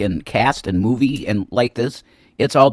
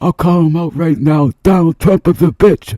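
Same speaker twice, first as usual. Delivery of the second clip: loud, high-pitched, slurred rant with barely-formed words; 5 semitones higher, 7 dB louder than usual. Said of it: "he can barely say it 'cause his lips are, like, paralyzed".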